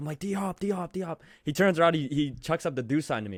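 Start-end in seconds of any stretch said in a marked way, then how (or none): 0.2-1.2 high, repeated put-on yelling. A fan retells yelling to get a player's attention: retelling yelling for attention. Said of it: "And I'm yelling at DeAndre Hopkins".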